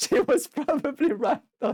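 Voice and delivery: laughing, voice pitched very high. Reacting to a scene on screen, laughing while talking. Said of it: "I'm sorry that I'm laughing".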